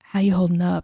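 low, husky, sensitive voice. Describing how a character asks someone how they are: imitating Jennifer Hale, low husky tone. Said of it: "she'll kinda drop the tone of her voice and get this almost kind of huskiness".

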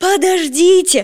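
loud high yell. Chasing a wolf on the run, he shouts for it to wait: shouted. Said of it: "крикнул Петя".

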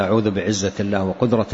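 plain

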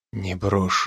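whispering. Narrator reads the man answering the crying narrator's plea, whispered. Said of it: "прошептал Райан".

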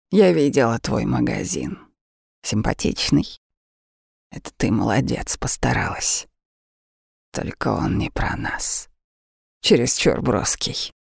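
ironic, low, wry, resigned. A woman speaks to the narrator, with ironic resignation. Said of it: "только ироничная обреченность".

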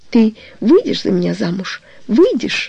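ordinary delivery

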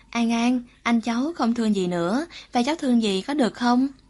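ordinary delivery

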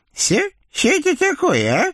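very high astonished witch voice, toothless lisped s sounds. Narrator reads the witch's question after the blacksmith struck her teeth, toothless lisping. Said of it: "шепеляви абсолютно беззубым ртом изумленно спросила ведьма".

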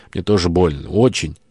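ordinary delivery

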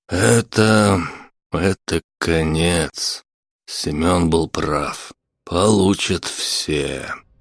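weary, tired voice. Vasily answers his friend after the sergeant dies on the floor, weary. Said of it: "устало сказал Василий".

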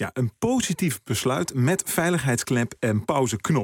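positief stressed and said slowly.

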